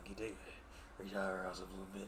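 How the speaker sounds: very low, hushed, deep voice. Showing a Keith David impression while listing the movie's cast: Keith David voice. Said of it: "that's Keith David".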